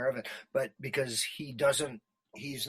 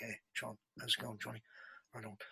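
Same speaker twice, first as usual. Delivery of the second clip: soft, low, warm, easy-going British voice; 10 dB quieter than usual. Recalling how Heath greeted John, doing Heath's low, sexy, warm voice. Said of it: "that low, sexy, warm voice kind of thing".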